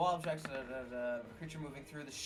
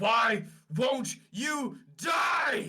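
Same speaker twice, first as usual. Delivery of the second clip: bloodthirsty, raging roar, very loud, very slow, drawn-out; 9 semitones higher, 11 dB louder than usual. Voicing a raging fighter mid-battle: bloodthirsty raging shout. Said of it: "in a bloodthirsty rage once more as he is shouting out".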